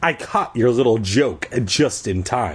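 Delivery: ordinary delivery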